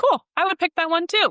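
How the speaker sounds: mock very high voice, plain, unfussy, matter-of-fact. Retelling a mentor's question at a dog show: Clifford's matter-of-fact voice. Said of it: "In his very matter-of-fact voice that Clifford has".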